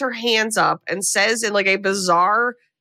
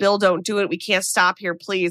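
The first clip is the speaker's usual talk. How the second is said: put-on begging, pleading voice. Retelling a film scene where a passenger begs the driver not to stop: imitating someone begging. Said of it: "she's begging Bill not to stop".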